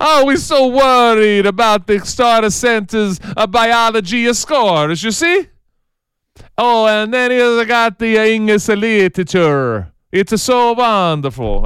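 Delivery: put-on Swedish-accented English. Mocking athletic directors who talk about academics, in a put-on swedish accent. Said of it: "I just went Swedish there".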